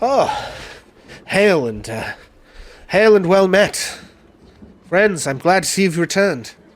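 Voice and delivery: put-on faint British accent, middle pitch, slow and deliberate. Voicing Ismark greeting the returning party: Ismark voice, kinda British, middle pitched. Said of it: "kinda British and slightly middle pitched".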